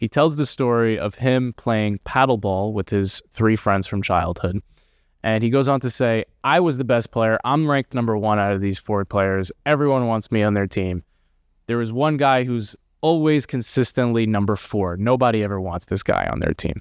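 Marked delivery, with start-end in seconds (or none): none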